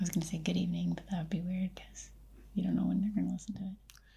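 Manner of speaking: speaking in a whisper. Explaining to another speaker why she won't say good evening, whispering. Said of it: "You shouldn't whisper".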